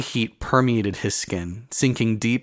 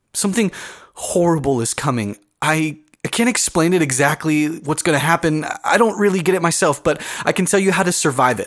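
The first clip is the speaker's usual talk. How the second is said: frenzied, frantic, high-pitched voice; 6 semitones higher, 4 dB louder than usual. A woman records a warning message, frantic. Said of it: "[name] was shocked to hear [name]'s voice. She sounded frantic, not sweet and bubbly like he remembered when he met her at the assembly".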